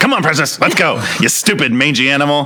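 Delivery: contemptuous, scornful, bossy, high goblin voice. Voicing one of the goblins as it calls to Precious: goblin voice. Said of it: "one of them was like".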